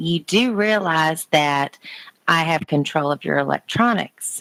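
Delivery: ordinary talk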